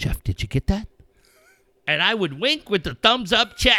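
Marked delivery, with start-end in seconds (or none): 0.0-0.9 very gentle, soft tone. Retelling what someone always said to him over the talkback button, imitating a very gentle tone. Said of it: "in a very gentle tone".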